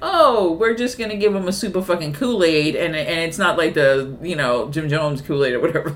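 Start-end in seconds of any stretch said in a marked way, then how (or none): none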